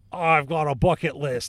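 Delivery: put-on Australian accent. Imitating an actor wanting to make action movies: failed Gerard Butler impression. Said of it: "I don't know why he's Australian".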